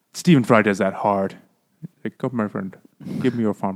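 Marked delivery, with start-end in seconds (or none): 2.1-3.7 put-on Indian accent, quieter. Complaining about a performer's voices, imitating Stephen Fry's Indian accent. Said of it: "He does like that kind of Indian accent thing".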